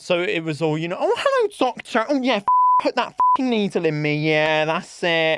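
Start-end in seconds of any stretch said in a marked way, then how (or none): 1.0-5.4 animated, high, loud, sing-song voice. Acting out a video where she gets the vaccine: Sophie Anderson impression. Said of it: "Sophie Anderson gets the vaccine".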